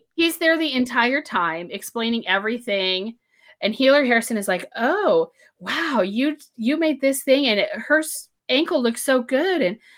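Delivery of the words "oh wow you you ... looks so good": fawning, gushing, flirty, tripping over the words. Retelling a book scene where Healer Harrison flirts: imitating Healer Harrison flirting shamelessly. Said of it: "is flirting with him shamelessly".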